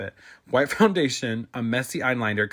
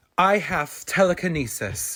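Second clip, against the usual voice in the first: cold, cruel tone, pitched higher; 6 semitones higher than usual. Reading a story aloud, voicing a character's cruel answer. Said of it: "he answered cruelly".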